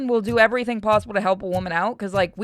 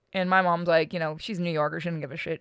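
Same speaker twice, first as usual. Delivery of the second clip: ordinary talk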